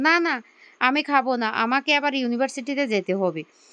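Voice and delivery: ordinary delivery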